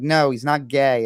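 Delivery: mock irritated, annoyed, slow delivery. Retelling how a teacher answered students in class: imitating an annoyed teacher. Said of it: "would get annoyed and be like".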